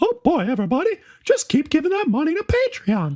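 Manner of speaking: very high cartoon squeak swooping up and down. Speaker follows Joe's impression with his own, Mickey Mouse voice. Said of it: "that's my Mickey Mouse".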